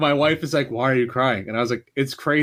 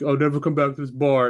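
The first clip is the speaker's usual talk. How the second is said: put-on sobbing through the words, tearful crying voice. Retelling how a maced friend reacted: imitating a friend crying. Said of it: "He was, like, crying".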